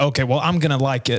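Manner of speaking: plain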